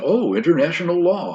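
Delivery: loud, high-pitched, scornful, dismissive mocking tone. Retelling how he answered a reporter's question: imitating a mocking tone.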